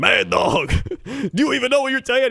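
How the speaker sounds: loud, high-pitched yelling. Retelling a sports show argument: Stephen A. Smith impression, yelling. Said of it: "Stephen A. Smith is like".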